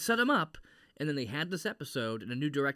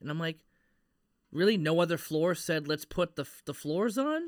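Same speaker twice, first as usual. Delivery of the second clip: ordinary delivery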